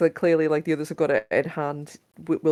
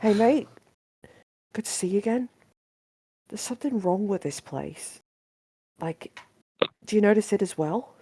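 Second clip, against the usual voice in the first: hushed, quiet whisper, higher; 5 semitones higher than usual. In a roleplay, a player's character whispers to Lavender so no one else hears: quiet whisper. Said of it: "whisper to Lavender very quietly".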